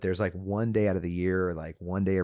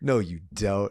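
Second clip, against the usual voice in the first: put-on angry tone, much louder; 3 dB louder than usual. Recounting a past reply to him, retelling an angry retort. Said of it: "I was so angry".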